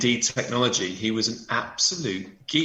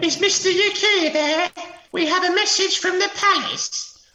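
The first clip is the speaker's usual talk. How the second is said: put-on very high, loud Victorian errand-boy call; 6 dB louder than usual. Speaker imagines a boy knocking at the door with a palace message, Victorian messenger boy voice. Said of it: "some sort of Victorian boy knocking on the door".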